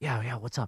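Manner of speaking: softly murmured, hushed stage whisper. Retelling a phone call where the other person answered: imitating someone half-whispering.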